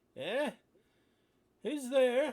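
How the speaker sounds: put-on very high, loud elderly voice. Narrator voicing someone answering a player calling out, somewhat elderly voice. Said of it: "you hear a somewhat elderly voice going".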